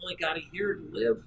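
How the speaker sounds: very quiet and soft, barely above a hush. Illustrating vocal variety for speaking from a lectern: soft, quiet delivery. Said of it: "sometimes you want to speak soft".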